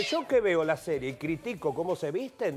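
plain

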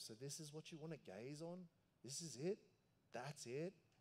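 mock affectionate, gently teasing, loving sarcasm. Voicing God's reply to people binging shows for hours: loving sarcasm. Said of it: "in maybe loving sarcasm".

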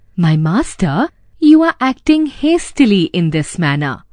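plain

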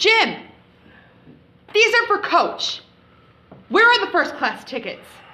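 high, irate, demanding angry outburst. Demanding the first class tickets from Jim in a scene, loud voice. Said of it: "can you keep your voice down?".

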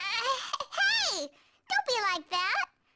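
way-high little cartoon voice, very slow. Voicing a character while playing a game, high cartoon voice. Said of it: "I'm doing a little cartoon voice, which makes it go way high".

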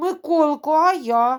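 plaintive whisper. Narrator reads a character's line to the boy in a story, plaintive whisper. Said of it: "жалібно шепоче Соня".

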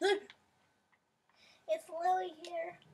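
loud, high-pitched bad cartoon voice. Greeting someone and announcing himself, in a bad Louie voice. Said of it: "Do I bad Louie voice down here?".

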